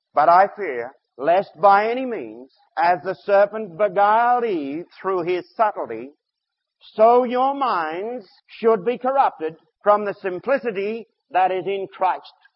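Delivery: very slow, careful, deliberate, word by word. Reading 2 corinthians 11:3 aloud to listeners, very slow, careful reading. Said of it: "Let me read it very slowly, very carefully".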